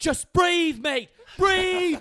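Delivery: very loud, very high screaming, drawn out. Retelling a surfer's shout to breathe between waves: imitating Ido screaming. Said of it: "he looks over and he screams".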